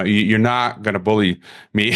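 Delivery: ordinary delivery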